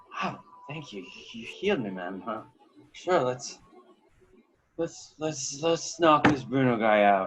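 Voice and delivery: acted drunk character voice. Voicing a still-drunk character thanking the healer: playing a drunk character. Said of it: "it won't help with his drunkenness".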